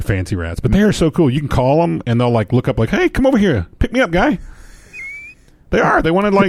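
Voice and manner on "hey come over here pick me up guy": high-pitched put-on rat voice with Canadian accent. Speaker voices the pet rats of the speaker's daughter calling out; rat voice with Canadian accent. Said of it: "Do they have that accent?".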